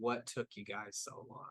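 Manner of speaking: half-whispered, breathy, drunk, sarcastic mocking tone. Voicing a character greeting the returning party: drunk, sarcastic voice. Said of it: "very, very drunk, sarcastic Angie just saying".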